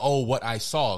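usual speaking voice

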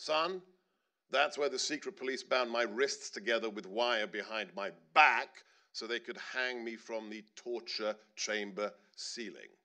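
ordinary talk, nothing marked

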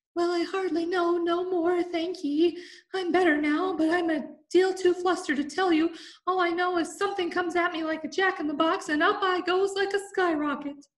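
very high, small, feeble squeak. Bill answers the others asking what happened to him: Bill's feeble squeaking voice. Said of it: "a little feeble squeaking voice".

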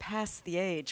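American pronunciation of "past". An australian speaker shows how americans say the phrase: american accent. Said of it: "so Americans go".

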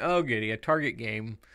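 plain

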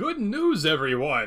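announcer-style delivery with wild pitch swoops. Speaker opening before reading out a promotion message: terrible Professor Farnsworth impression. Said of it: "Terrible Professor Farnsworth impression".

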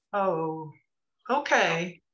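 confused, puzzled, bewildered tone. Hearing an apology about last night with Kayla, a character replies, confused.

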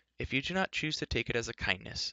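ordinary talk

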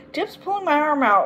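grumbling, high, whiny complaining tone. Someone struggling with a lunging, barking dog on a leash, complaining. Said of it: "complained Agatha".

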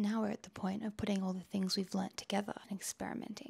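hushed whisper. Explaining an electronics project late after midnight, whispering. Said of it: "I'm whispering because it's after midnight".

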